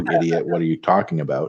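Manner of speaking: ordinary talk, nothing marked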